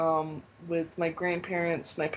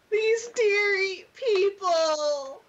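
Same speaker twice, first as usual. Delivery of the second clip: very high, loud, slow, deliberate, drawn-out voice; 5 dB louder than usual. Offer a better imitation of how Brandon said it, imitating Brandon. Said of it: "I have a better imitation of how Brandon said it".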